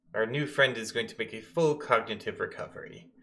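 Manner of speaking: normal talking voice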